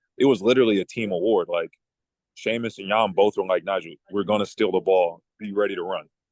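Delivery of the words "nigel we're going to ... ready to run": ordinary talk, nothing marked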